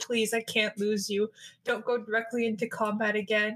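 put-on crying, pleading tone. Retelling Dumisa pleading with Astraea in the bathroom; imitating Dumisa crying. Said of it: "I'm crying. I'm on my knees like a simp".

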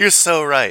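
high, loud laughing burst.

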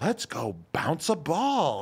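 put-on loud, high, animated, sing-song kids' show voice. Describing a kids' video host who talks like this, imitating Blippi's animated kid-show voice. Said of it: "acts so animated, ridiculous to the camera".

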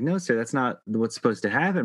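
normal talking voice

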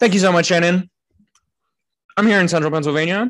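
very loud, high, auctioneer-style patter. Troy opens the silly-crimes segment reporting live, in an auctioneer-like voice. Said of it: "You sound like an auctioneer".

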